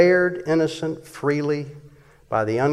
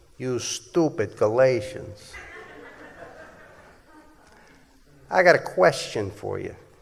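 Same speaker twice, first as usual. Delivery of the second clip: wise-guy mobster voice with swooping pitch; 3 dB quieter than usual. Addressing the Galatians about how they were saved, in a mafia voice. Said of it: "In my mafia voice".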